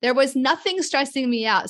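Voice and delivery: really defensive, insistent tone. Talking with another speaker about a diagnosis, really defensive.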